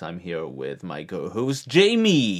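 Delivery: slow, swooping put-on radio announcer voice. Show host introducing the co-host at the episode's start, in a radio announcer voice. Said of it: "I'm trying to do a radio voice".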